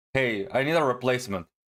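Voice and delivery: ordinary talk, nothing marked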